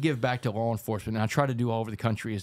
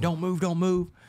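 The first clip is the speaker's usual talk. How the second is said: high-pitched, screaming, yelled voice. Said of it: "He's screaming".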